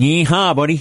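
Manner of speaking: yeehaw said in a Cape Breton accent. Asked for a big yeehaw as someone from Cape Breton, do it in a Cape Breton accent. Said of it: "You got to do it with a Cape Breton accent".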